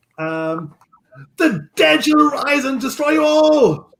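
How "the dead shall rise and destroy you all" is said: very high, shrill, loud, crying battle cry. Voicing a swordsman who leaps back and brandishes his sword: shouting battle cry. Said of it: "and shouts".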